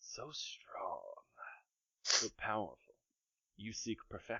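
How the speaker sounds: very quiet, breathy, smoky whisper. A game master voices a smoke voice speaking in a player's head, whispering smoke voice. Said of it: "you too hear the same smoke voice in your head".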